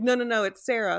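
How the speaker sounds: put-on sobbing while speaking. Speaker retelling calling out to a neighbor after a break-in, imitating own sobbing. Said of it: "I just flipped and was like sobbing".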